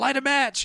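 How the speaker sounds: frantic, urgent, high panicked blurt. Retelling a movie scene, a character urging to light a match: imitating panicked urgency. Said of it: "'cause Gary's panicking".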